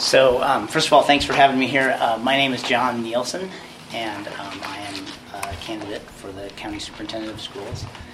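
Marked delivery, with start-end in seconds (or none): 3.9-7.8 soft, barely audible speech. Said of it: "Speak up".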